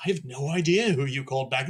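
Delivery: put-on British accent. Retelling what the lead actor from Hunger said backstage at the Oscars, imitating a British accent. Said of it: "in his British accent".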